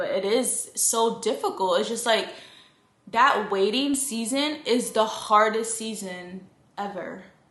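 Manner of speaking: slow, choked-up, emotional, holding back tears. Describing a hard waiting season, trying not to get emotional: emotional, holding back tears. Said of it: "I'm trying not to get emotional again".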